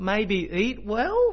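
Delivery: unsure rising pitch at end of "well". Quoting her unsure answer to the health question: rising pitch at the end on well. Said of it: "Her voice went up at the end of the sentence".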